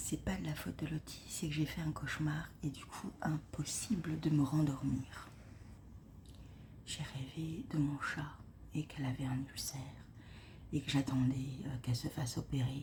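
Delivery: very soft, unvoiced whisper. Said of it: "Je parle hyper doucement".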